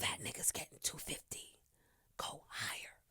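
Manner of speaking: hushed, barely voiced whisper. Retelling what someone whispered to the speaker: imitating a whisper. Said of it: "Envy whispers to me while I'm there".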